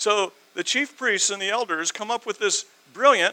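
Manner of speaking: loud, high, heavily sarcastic, stressed "brilliant". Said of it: "I'm using sarcasm here".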